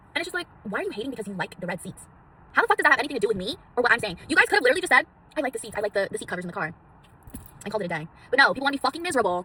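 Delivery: loud, worked-up ranting. A video maker answers commenters about their remarks, getting worked up, ranting. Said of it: "I'm getting a little worked up".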